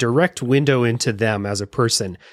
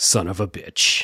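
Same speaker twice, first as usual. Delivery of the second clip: slow, smooth, resigned delivery; 4 semitones lower than usual. Quoting a game character's line said to oneself: smooth Garcian line. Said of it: "real smooth".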